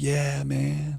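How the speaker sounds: laid-back surfer voice. Describing the surfer stereotype, doing a surfer impersonation. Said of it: "That's my surfer impersonation".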